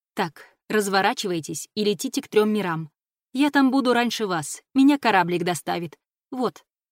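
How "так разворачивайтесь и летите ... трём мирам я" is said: ordinary delivery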